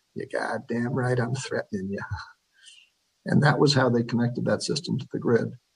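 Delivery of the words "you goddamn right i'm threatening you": put-on thick New England accent, quieter. Retelling a guy's reply to a utility engineer, in a thick New England accent. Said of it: "said in a rather thick New England accent".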